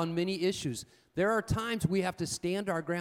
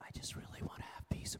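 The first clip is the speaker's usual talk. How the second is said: very quiet, soft, hushed, barely voiced whisper. Acting out answering someone who is yelling, repeating the line: whispering. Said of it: "Why are you whispering?".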